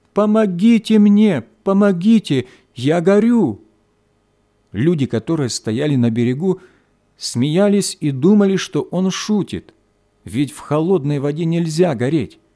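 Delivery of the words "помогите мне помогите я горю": pitiful, high, drawn-out wailing cry. Narrator reading a little thief's cry after falling into water, plaintively shouting. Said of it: "начал жалобно кричать".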